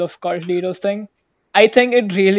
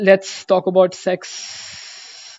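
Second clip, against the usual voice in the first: very slow, trance-like hissing drawl, dragged S. Imitating a speaker's hissing, dragged final S: imitating a hissing, trance-like speaker. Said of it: "So he'll be like".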